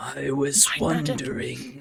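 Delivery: raspy creepy voice. Voicing a different voice speaking in a player's head: raspy creepy voice. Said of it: "very raspy".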